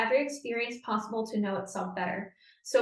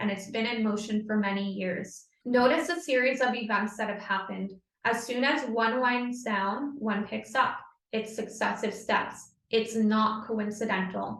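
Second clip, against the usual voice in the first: plain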